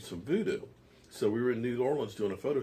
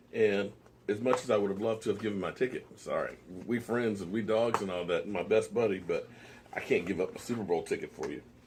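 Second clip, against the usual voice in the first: plain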